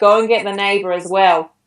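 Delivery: ordinary talk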